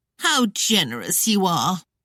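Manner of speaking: sneering, contemptuous, scornful. Reading a story aloud, a rival mocking the couple: sneering. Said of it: "Claudia sneered".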